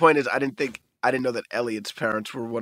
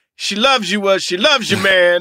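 loud, high and shrill blasted voice; 9 semitones higher, 9 dB louder than usual.

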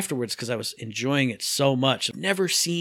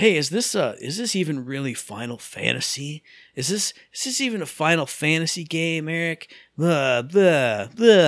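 put-on, drawn-out internet guy voice; 2 semitones higher than usual. Mocking the questions from Reddit users, in an internet guy voice. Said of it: "I'm putting on my internet guy voice".

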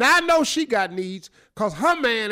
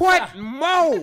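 high, raised-voice yell, stretched out longer; 6 semitones higher, 3 dB louder than usual. Recapping a letter about a cheating wife to the others: yelling. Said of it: "Why are you yelling?".

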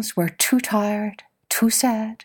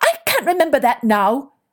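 short, cross, irritable, snappish tone; 3 semitones higher, 4 dB louder than usual. Elephant answers the animals after tripping into them, snapping. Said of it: "She snapped".

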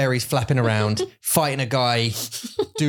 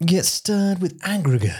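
put-on British narrator voice, higher; 6 semitones higher than usual. Imitating an audiobook voice in one's ear: Stephen Fry voice. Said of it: "Stephen Fry's in your ear going".

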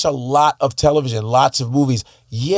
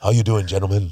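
put-on voiceover announcer voice, pitched lower; 6 semitones lower, 4 dB quieter than usual. Retelling an actor walking into a voiceover audition: Keith David voice. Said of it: "he talks like this the whole time".

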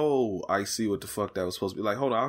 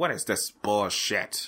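slow, deliberate, drawn-out put-on celebrity voice. Imagining David Lynch's reaction to this, in a David Lynch impression. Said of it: "I can't do his voice that way. / That was a pretty good impression".

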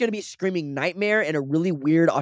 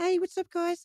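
soft, very high, childlike put-on British accent; 7 dB quieter than usual. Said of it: "baller ass British accent at eight years old".

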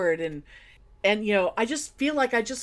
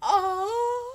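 soft, very high, stretched-out gasp; 12 semitones higher than usual. Retelling how the husband reacted to a kiss: imitating a soft gasped "oh". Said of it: "his hand went to his heart, and he gasped".

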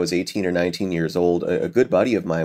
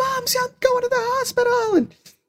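mock yelling, pitched much higher than normal. Recalling a phone call to a sister about going to hospital, retelling a yell into the phone. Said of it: "I'm like yelling to her in the phone".

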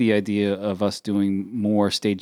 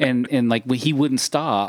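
ordinary talk, nothing marked

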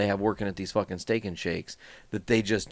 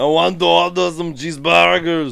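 put-on Austrian-accented voice; 8 semitones higher, 10 dB louder than usual. Retelling how they ordered food from the lady, in Arnold Schwarzenegger voice. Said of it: "we ordered our food in Arnold Schwarzenegger talk".

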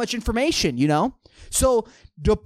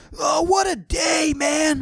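put-on very slow, high-pitched elderly man voice; 2 semitones higher than usual. Retelling answering someone who finally gives the time of day, in an old man accent. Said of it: "I'm just trying to establish the old man accent".

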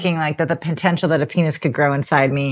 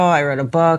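ordinary delivery

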